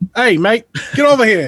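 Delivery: London police officer voice. Retelling how the police called down the man on the ledge: imitating a London cop. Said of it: "the cops were like".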